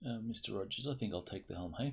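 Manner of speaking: plain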